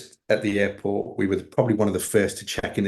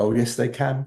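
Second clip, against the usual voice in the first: cool, calm, understated, matter-of-fact delivery; 3 semitones higher than usual. Retelling how a staff member who overheard answered him: retelling a very quiet reply. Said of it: "she just very quietly went".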